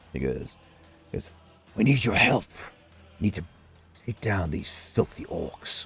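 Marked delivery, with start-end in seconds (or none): 1.8-5.9 hushed, close-in whisper. An armored individual right beside you speaks to you, whispering. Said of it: "he whispers to you".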